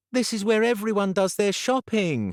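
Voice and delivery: very high, full-on whiny voice. Narrator reads a character's line during a shopping trip, in a whiny voice. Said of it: "her whiny voice already in full flow".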